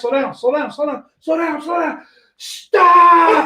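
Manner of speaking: put-on frantic, panicked shrieking, very high pitch. Retelling riding as a passenger before the crash: retelling own scream. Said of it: "And I screamed".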